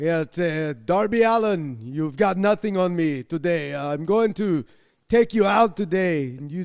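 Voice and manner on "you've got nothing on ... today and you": English with a laid-on, put-on Austrian accent. Co-hosting a show, one host voices a wrestler addressing opponents: Gunther impression. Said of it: "He's Austrian".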